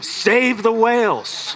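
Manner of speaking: high, screamed, demanding tone. Acting out someone screaming at guests in a hotel lobby: imitating someone screaming. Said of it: "started screaming at guests".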